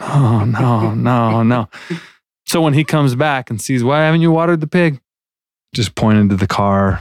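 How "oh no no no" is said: mock crying, much slower. Retelling sitting there after thinking he bankrupted Dad, imitating himself crying. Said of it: "I just sat there crying, going".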